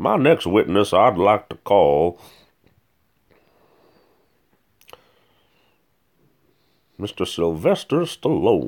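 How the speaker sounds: put-on sing-song old-time Southern orator voice. Acting a lawyer calling the next witness: 1800s southern lawyer voice. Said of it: "His voice reminds me of a Southern lawyer from the eighteen hundreds".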